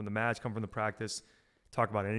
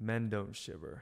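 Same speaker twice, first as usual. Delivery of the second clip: blunt, deadpan, matter-of-fact. Retelling an aunt's reply on a cold night: imitating Aunt Beck's deadpan line. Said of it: "just deadpan said".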